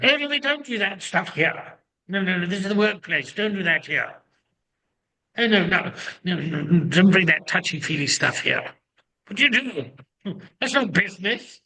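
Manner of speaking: put-on British accent, disapproving. In a group sharing, hearing a voice in the background, imitating a disapproving british voice. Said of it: "that British voice in the background going".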